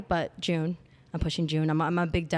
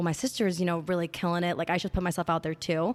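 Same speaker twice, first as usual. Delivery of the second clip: normal talking voice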